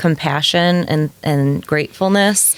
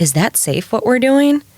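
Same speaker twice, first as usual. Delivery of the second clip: put-on nervous child voice, pitched higher; 7 semitones higher than usual. Voicing the inner child who taps her shoulder: imitating a nervous inner child. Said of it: "her voice is very nervous".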